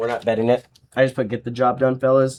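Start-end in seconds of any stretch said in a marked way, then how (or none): none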